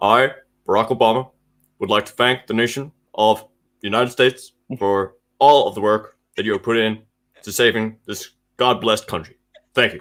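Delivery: speaking in short bursts with frequent pauses. Performing on request for the others: Barack Obama impression. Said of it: "I wanna hear your Barack Obama".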